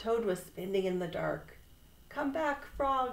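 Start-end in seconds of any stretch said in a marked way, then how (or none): 2.1-3.1 high, raised shout called out. Spinning in the dark, a toad shouts after a frog. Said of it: "he shouted".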